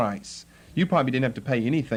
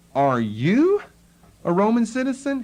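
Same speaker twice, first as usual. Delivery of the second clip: astonished, surprised tone with stress on "you"; 8 semitones higher, 4 dB louder than usual. Retelling a captain's question to Paul, with mock-surprised stress on you. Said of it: "the emphasis is on the word thou. ... He's surprised".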